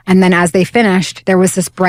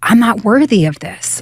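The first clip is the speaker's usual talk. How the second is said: overwhelmed, desperate, anguished outcry; 2 semitones higher than usual. Retelling being suddenly healed and thrown to the ground: retelling crying out. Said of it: "I was crying out".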